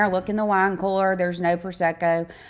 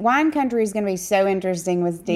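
ordinary talk, nothing marked

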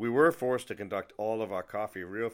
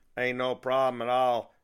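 loud yell in a thick Southern drawl. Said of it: "she yelled out in a thick Southern drawl".

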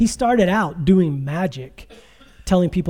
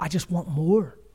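put-on tearful speech, quieter; 4 dB quieter than usual. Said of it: "He couldn't stop crying".

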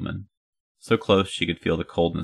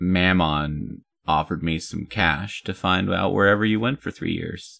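ordinary delivery

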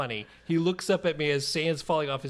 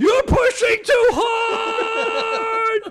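put-on shrill, very high, full-volume child's scream; 10 dB louder than usual. A parent retells his son sailing out of a swing, imitating his son screaming. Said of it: "he's screaming".

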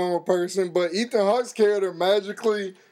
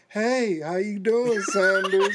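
put-on grinning villain voice. Retelling the villain's moment on screen: imitating a smiling villain. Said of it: "smiles in the camera like".

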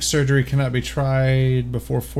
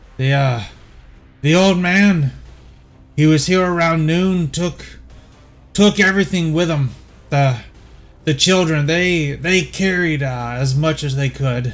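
put-on old man voice, much higher; 3 semitones higher, 3 dB louder than usual. Game master voices an old man hobbling up to the players, voicing the old bum. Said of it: "the old bum guy appears to have hollered".

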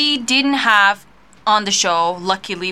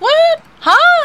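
high-pitched, loud, baffled "what". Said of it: "I was like".

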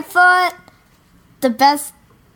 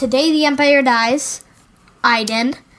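ordinary talk, nothing marked

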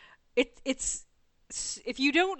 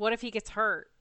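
plain

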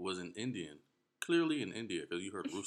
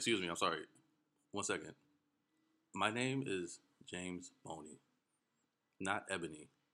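plain

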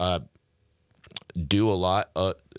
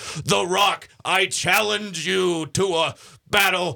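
high wrestler-style promo yell. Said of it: "those wrestlers who used to be like".

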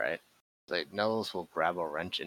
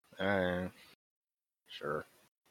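unenthusiastic, not excited, quieter; 4 dB quieter than usual. Answering a call to storm the office: unenthusiastic. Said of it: "don't sound so excited".

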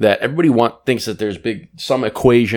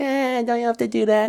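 put-on baby voice, much higher, quieter, slower; 13 semitones higher, 5 dB quieter than usual. Describing the two voices people use, demonstrate the little baby voice. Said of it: "the little baby voice that's going to be like".

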